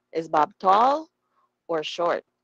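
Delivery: pitch rises on "tall", falls on "short". Teaching intonation of English choice questions: rise on tall, fall on short. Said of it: "Yung first description pataas, yung second description pababa".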